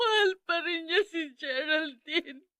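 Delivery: speaking through tearful sobs. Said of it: "Bakit ka umiiyak?".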